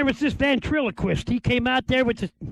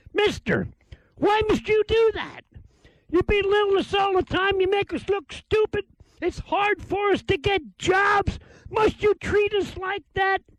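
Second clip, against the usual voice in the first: acted-out female hollering, pitched-up yelling; 8 semitones higher than usual. Telling how a woman in a crowd yelled at a man, imitating a woman yelling. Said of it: "she started yelling at this fella".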